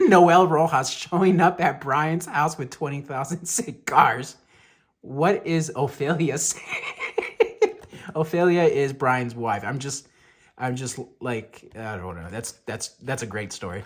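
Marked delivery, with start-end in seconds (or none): 0.0-7.8 words broken up by laughter. Reacting to a story about twenty thousand cigars: laughing while talking. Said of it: "I'm still laughing at".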